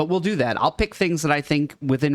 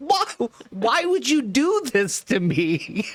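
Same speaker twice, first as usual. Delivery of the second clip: mock, high-pitched scream; 9 semitones higher than usual. Retelling screaming from another room at a shocking video: imitating own scream. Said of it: "I screamed from the other room".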